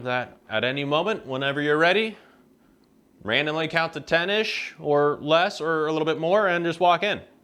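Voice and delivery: loud projecting voice. Calling instructions to Kate so she can hear: speaking loudly. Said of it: "sorry for yelling at you".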